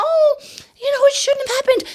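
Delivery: timid, meek, very high little voice. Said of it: "She's almost smiling like".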